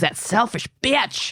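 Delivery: mock scream, high and shrill, very loud. Retelling a TV scene where a detective screams at a suspect: imitating a scream. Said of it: "gets in Ricket's face and screams".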